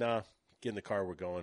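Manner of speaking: ordinary delivery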